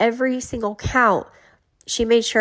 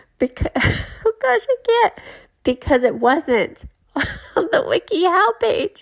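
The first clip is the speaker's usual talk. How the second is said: fighting off laughter mid-sentence while talking; 9 semitones higher than usual. Telling a story about someone's test, holding back laughter. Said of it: "I'm trying to keep it serious here".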